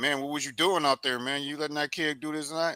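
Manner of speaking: mock dad voice, yelling and scolding. Acting out a dad scolding his son after he got beaten: imitating a dad yelling. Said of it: "have his dad yelling at him".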